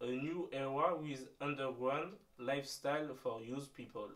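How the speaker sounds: shaky, wobbly put-on English accent. A French speaker reads aloud an English phrase that struck them, shaky English accent. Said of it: "avec euh, un accent anglais un peu un peu bancal".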